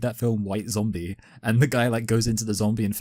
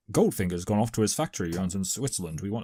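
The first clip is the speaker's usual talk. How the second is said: rough, loose imitation of a movie-star spy voice; 2 semitones lower, 4 dB quieter than usual. Acting out a line the film could have used: Sean Connery voice. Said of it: "giving them kind of a more Sean Connery voice".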